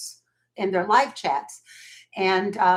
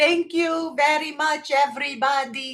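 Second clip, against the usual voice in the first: put-on slight Eastern European accent, slow and high; 7 semitones higher than usual. Speaker quotes mom thanking a call on the car speakers, imitating mom's Eastern European accent. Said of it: "in her little Eastern European accent".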